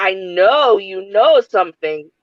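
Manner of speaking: put-on accusing voice. Retelling how Triton got in a scared character's face, mock-confrontational accusation. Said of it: "like getting in my face".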